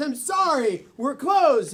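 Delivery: ordinary delivery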